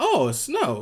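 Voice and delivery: rough, guessed-at, put-on Norwegian accent. Acting out Norway answering the rest of the world: put-on Norwegian accent. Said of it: "or whatever fucking Norway's accent is".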